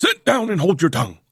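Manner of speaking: severe, stern voice, pitched high. Reading a story, an uncle silencing a boy: said sternly. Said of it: "said Uncle Richard sternly".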